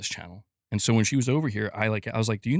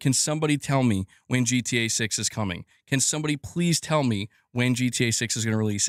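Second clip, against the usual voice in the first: ordinary talk, nothing marked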